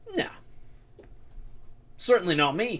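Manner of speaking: laid-back, relaxed boss character voice. A guild boss chewing on a pipe hires the party for a job; pipe-chewing guild boss voice. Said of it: "who's sitting back and he's chewing on a pipe. / who's sitting back and he's chewing on a pipe. / And I need you to pull a job for me. / Oh, aye. ... Oh, my lad".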